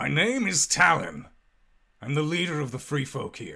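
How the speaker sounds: loud, swooping headless rider voice, big pitch swings. Voicing a headless rider introducing itself: headless rider voice. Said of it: "and it says".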